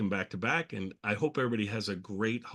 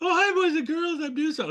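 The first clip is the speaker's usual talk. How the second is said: very high-pitched, loud puppet character voice; 7 dB louder than usual. Recalling how the puppet sounded during a lesson, in a very high puppet voice. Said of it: "Sometimes it was very high".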